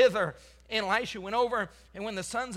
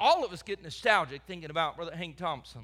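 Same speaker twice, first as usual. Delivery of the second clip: usual speaking voice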